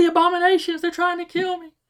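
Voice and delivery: mock shrieking cry, very high-pitched. Narrating a scene where someone dives at a man, retelling a scream. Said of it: "Then he starts screaming".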